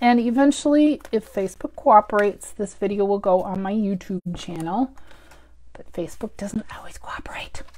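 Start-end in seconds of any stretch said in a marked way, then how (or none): 5.7-7.6 secretive, conspiratorial whisper. On a video, whispering as if Facebook can't hear: whispered. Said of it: "I'm whispering that like they can't hear me".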